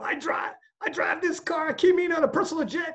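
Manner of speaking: put-on wrestler yell. Retelling a favourite Ric Flair quote in a Ric Flair energetic yell impression. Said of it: "And he's yelling all energy".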